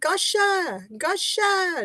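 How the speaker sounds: put-on excited, really loud, high child hollering. Recounting a trip through IKEA, imitating how she started yelling really loud. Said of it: "she started yelling like like really loud".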